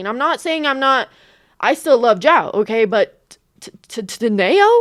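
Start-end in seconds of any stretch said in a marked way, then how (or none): 2.9-4.8 stuttering and stammering, slower. Talking about which of the men stood out, stuttering on neo's name. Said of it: "see how I stuttered when I said his name?".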